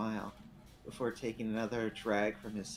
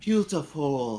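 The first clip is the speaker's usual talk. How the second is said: seductive, sultry put-on French accent, louder; 5 semitones higher, 10 dB louder than usual. Challenged to try the accent, the speaker answers in a seductive French accent. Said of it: "seductive France accent".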